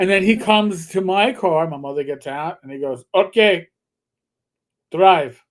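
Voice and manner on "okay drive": put-on short line in a Middle Eastern accent. Retelling a driving test, quote the man testing you in a Middle Eastern accent. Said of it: "he had some foreign Middle Eastern accent".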